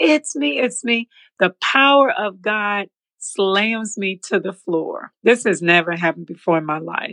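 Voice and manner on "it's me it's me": acted, high-pitched scream. Retelling running to the pastor, hands up: retelling her own scream.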